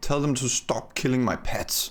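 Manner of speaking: high-pitched hissing through the words. Voicing her as the others enter, hissing. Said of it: "as she hisses".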